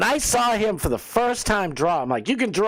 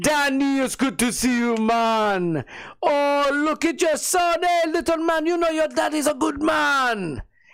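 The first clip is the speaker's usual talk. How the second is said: put-on drawn-out Jamaican accent, man's voice; 6 semitones higher than usual. Retelling a man in the street greeting the speaker's dad, Jamaican accent. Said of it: "I see some Jamaican dude and he's like".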